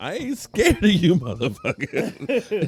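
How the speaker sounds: loud, high, belted movie-star voice. Answer somebody who asked if you are scared of the Eagles, in a Samuel L. Jackson voice. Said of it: "In my Samuel L. Jackson voice".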